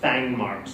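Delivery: ordinary talk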